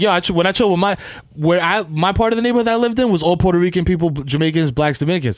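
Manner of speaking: ordinary talk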